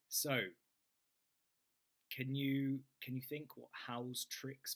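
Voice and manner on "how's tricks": ordinary delivery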